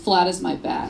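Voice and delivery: mimicked mutter under the breath. Retelling a schoolmate's jab as he walked by, imitating a mutter under breath. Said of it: "under his breath he goes".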